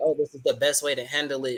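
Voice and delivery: normal talking voice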